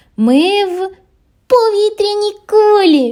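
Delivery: very high, loud, drawn-out cry of wonder. A squirrel rising in a balloon basket with other animals, exclaiming. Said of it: "вигукнула білочка".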